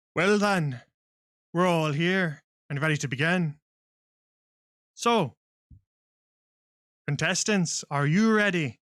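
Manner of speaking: booming announcer voice. Voicing a robed man addressing contestants before a crowd: booming loud voice. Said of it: "his voice kinda booms out loudly".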